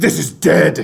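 growly, beast-like monster voice. Describing a character who bites a lobster's head off, the speaker does a Venom voice. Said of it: "in like kind of a venom voice goes".

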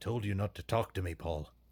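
Scottish-accented voice. Opening the podcast episode, a host addresses Paul with a Scottish Willie impression. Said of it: "You really pull off that Scott Willie".

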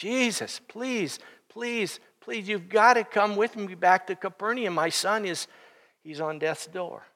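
put-on pleading man's voice. Retelling a father begging jesus to come with him, acting out his pleading. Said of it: "He is pleading with Jesus".

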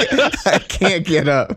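slow, high-pitched laughter.

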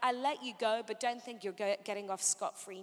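plain

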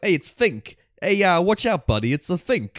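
put-on New York accent. Describing film characters who all have New York accents, put-on New York accent. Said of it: "they all have like the New York accents".

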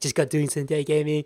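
overly nice, sweet puppy-dog voice. Speaker imitates how his 18-year-old self sounded, in a high-pitched puppy dog voice. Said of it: "It's a puppy dog voice".

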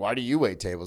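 put-on snarky tone. Retelling what tables ask while waiting tables: imitating a snarky question. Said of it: "when my tables get really snarky".

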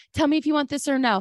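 put-on aggressive yelling. Retelling how Ron yelled at Sam: imitating Ron yelling. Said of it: "He's yelling at Sam".

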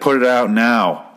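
slow, intimidating, menacing, each word weighed. Retelling how a boxer tells a man to put out his cigar: imitating an intimidating order. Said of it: "has to intimidate the guy".

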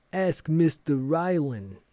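put-on, deliberately bad New York accent. Retelling a scene where Luis answers a woman's question, terrible New York accent as Luis. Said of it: "which is in a terrible New York accent".

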